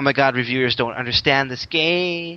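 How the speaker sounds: mocking outcry with "game" stretched long. Retelling what forum posters wrote about reviewers: impression of GameFAQs forum posters. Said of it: "that was the perfect impression".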